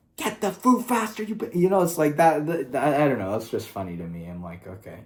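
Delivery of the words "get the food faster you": very high shrieking, screaming. Imagining the bear guy yelling at his servants, mock screaming. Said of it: "screaming at fucking his servants".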